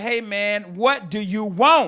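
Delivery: mock irritated, angry, fed-up, out-of-patience snap. Retelling answering his daughter the third time: imitating himself being angry. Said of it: "I'm pissed, I'm mad now".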